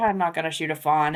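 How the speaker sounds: usual speaking voice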